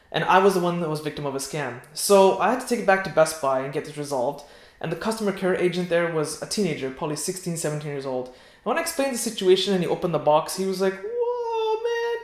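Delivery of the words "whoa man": squeaky, very high exclamation, first word stretched. Retelling a young store agent's reaction to the opened box: imitating a high-pitched voice. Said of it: "his voice went all high-pitched".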